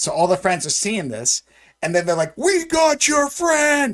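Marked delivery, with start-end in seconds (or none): 2.4-4.0 shrieking scream, very high and long. Retelling a movie scene where rescuers call out: imitating someone screaming. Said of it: "And they're kinda screaming it".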